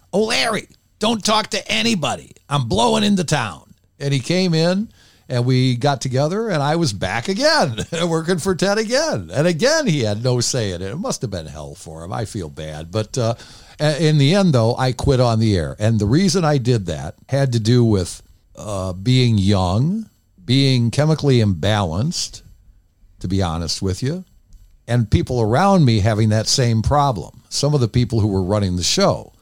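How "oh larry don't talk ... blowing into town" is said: very high-pitched put-on voice. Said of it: "he talked like this".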